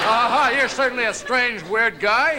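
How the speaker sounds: mocking, laughing, bully-like jeer.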